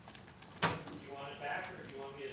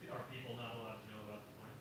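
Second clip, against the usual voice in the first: ordinary delivery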